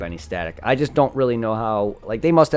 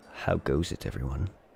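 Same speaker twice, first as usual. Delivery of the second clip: very low, deep, very quiet, soft ASMR voice; 9 semitones lower, 11 dB quieter than usual. Speaker shows the voice he says he rarely uses, in an ASMR voice. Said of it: "My A S M R voice".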